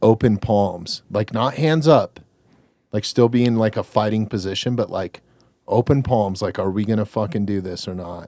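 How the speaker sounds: usual speaking voice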